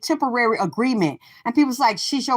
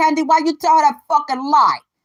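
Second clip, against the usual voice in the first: put-on loud, heavy, thick New York accent, laid on; 4 semitones higher, 5 dB louder than usual. Retelling an argument, quoting a woman from New York, imitating Nikki's New York accent. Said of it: "So she had that thick accent".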